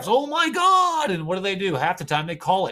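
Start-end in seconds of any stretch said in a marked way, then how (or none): 0.1-1.1 very high, whingeing, whiny moan. Describing a player complaining to the refs, the speaker imitates him whining. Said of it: "he's whining to the refs".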